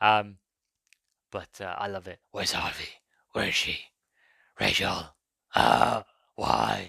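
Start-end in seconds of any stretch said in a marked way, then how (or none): 2.3-6.9 rough, creaky, ground-out vigilante voice. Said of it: "I'm probably blown out".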